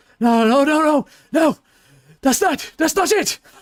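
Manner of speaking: shrill, very high, very loud panicked shouting. Narrating a scene where a man backs away, freaking out in panic. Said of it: "he kind of backs up and freaks out and he goes".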